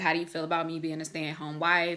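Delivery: ordinary talk, nothing marked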